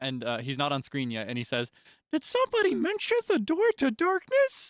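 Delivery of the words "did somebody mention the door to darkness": very high, loud, swooping, bouncing sing-song cartoon voice. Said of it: "you hear Mickey Mouse's voice".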